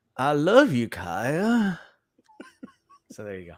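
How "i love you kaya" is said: very slow, swooping audiobook narrator delivery. Giving a little taste of the audiobook, imitating the audiobook narrator. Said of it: "my impression of the woman who did the reading".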